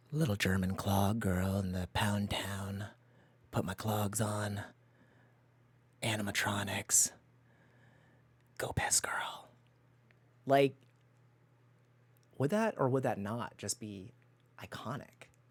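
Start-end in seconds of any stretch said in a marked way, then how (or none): 0.1-9.4 deep demonic voice. Imagining a demonic presence commenting from the screen: demonic presence voice. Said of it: "a demonic presence and just comment on things".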